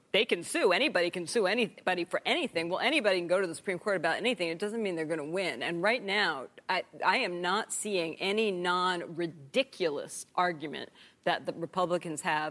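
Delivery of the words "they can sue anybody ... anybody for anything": self-satisfied, know-it-all, smug professor-like lecturing tone. Retelling a professor's answer to students' question, mock-smug professor. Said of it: "the professor says smugly".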